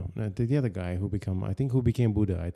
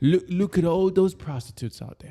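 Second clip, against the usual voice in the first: very high, shrill, loud, raised put-on British accent; 10 semitones higher, 6 dB louder than usual. Speaker acts out someone looking out the palace windows, British accent. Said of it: "That's my British accent".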